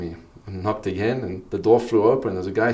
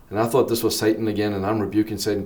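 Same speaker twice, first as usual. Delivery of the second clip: usual speaking voice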